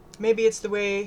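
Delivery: ordinary delivery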